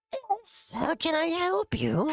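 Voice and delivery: put-on very high, rasping old creature voice. Game master voices an elder answering a visitor, in a raspy voice. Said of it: "you can hear him speaking like a raspy voice".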